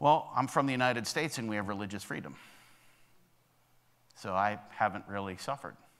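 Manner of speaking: put-on sheepish tone. Telling how an American minister answered a small group leader, retelling a sheepish reply. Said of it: "he kind of sheepishly said".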